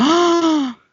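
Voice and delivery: high, excited gasp of delight. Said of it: "I got really excited".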